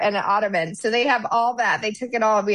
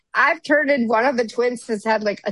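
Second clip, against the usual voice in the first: plain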